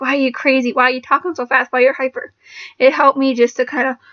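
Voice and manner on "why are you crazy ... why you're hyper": ordinary talk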